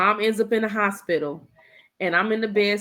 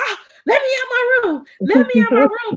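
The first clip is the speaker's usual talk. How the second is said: mock very high, loud, frantic, panicked pleading voice; 7 dB louder than usual. Retelling being locked in a room by the kids: imitating own panic. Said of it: "and I'm panicking".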